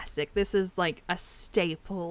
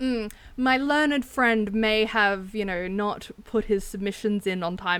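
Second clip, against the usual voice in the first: usual speaking voice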